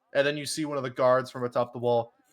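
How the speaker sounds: normal talking voice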